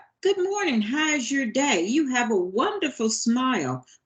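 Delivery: kind, warm, encouraging, welcoming friendly tone. Demonstrating tones of voice with a morning greeting: warm, kind and welcoming. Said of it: "That's kind of encouraging, kind, and welcoming".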